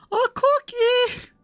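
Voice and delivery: high falsetto voice. Reading a subtitled character line aloud, in falsetto. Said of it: "In falsetto".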